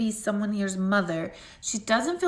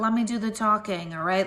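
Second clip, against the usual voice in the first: ordinary talk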